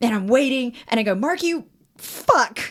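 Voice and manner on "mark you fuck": high, exasperated, frustrated blurted outburst. Retelling cursing at Mark in frustration while a friend watched; acting out frustration. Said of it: "and I'm like super frustrated".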